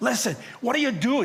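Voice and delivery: alarmed, high-pitched, urgent voice.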